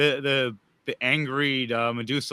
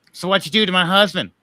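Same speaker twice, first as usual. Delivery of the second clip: enraged, angry raised voice, pitched up; 6 semitones higher, 7 dB louder than usual. Voicing an angry NPC who confronts a player about her husband: angry NPC voice. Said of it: "She looks at you with anger and rage".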